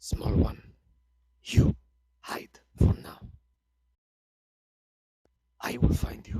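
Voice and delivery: barely audible, very quiet, hushed whisper. The narrator voices a lizard folk whispering to the smaller one clinging to its shoulder. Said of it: "You can hear him whisper very quietly".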